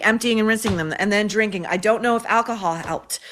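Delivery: ordinary talk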